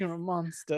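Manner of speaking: acted, high, tearful theatrical crying outburst. Imitating a character who is crying in a stage-play way: imitating Natasha crying. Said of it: "crying and goes, like".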